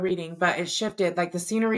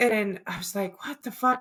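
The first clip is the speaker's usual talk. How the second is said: usual speaking voice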